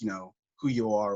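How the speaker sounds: ordinary delivery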